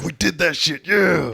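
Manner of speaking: put-on tough, very high, gruff, boastful hard-man voice. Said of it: "still trying to be hard".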